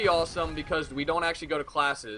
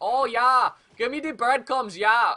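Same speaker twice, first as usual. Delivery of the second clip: pigeon-like put-on voice in a Swedish accent; 8 semitones higher, 6 dB louder than usual. Joking about feeding pigeons breadcrumbs, voicing the pigeons in a Swedish accent. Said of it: "I don't know why they're fucking Swedish".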